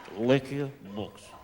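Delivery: put-on thick Russian accent. Acting out a street seller approaching an American: heavy Russian accent. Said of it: "big, heavy accent".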